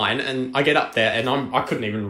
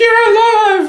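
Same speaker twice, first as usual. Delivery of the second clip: play-acted, very loud, very high, shrill sobbing wail; 10 dB louder than usual. Recalling being found after getting lost as a kid, imitating Miss Bates bawling. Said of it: "who was just still bawling".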